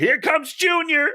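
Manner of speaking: mock shrill, very high yelled call. Retelling a movie scene where a character yells from a car: imitating someone yelling. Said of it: "I don't know why he's yelling it".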